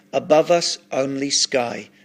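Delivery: ordinary delivery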